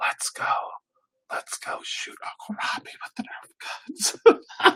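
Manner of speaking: soft, secretive whisper, right at the ear. Retelling what a nephew would say in his ear: imitating a child whispering. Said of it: "get real close to my ear and he would tell".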